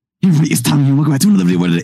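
rapid-fire, very fast, high-pitched delivery. Youtuber re-enacting his old video intro, really, really fast. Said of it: "really, really fast".

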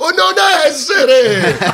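very high, shrill, loud shout. Recalling stammering as Hamlet, the speaker mimics an audience member shouting.

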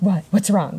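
ordinary talk

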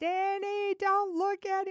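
shrill, very high, top-of-lungs scream. Aunt [name] retelling what she yelled at her nephew Danny, retelling a scream. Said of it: "I am screaming at the top of my lungs".

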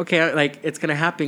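ordinary talk

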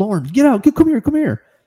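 put-on shrill, very high-pitched shout. Retelling spotting a bear and calling someone over, retelling a yell. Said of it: "So I start yelling".

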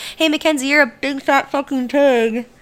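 muffled taunting voice. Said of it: "with, like, his hand in front of his mouth".

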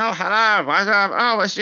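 put-on squeaky, very high young teenager voice. Imitating a young teenage character's voice from the game being discussed. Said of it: "young teenagers that sound like this".

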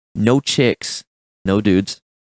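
flat, even, level, toneless monotone. Posing a would-you-rather question to the group: monotone. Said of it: "That was really monotone".

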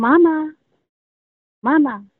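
put-on high, small, childlike little girl's voice, calling out. Describing a voice heard around the house: little girl's voice on mama. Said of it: "something like that, but in like a little girl's voice".

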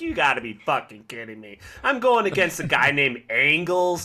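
put-on sneering voice. Acting out a wrestler sneering at the crowd: imitating Danielson sneering. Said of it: "sneering at the crowd like".

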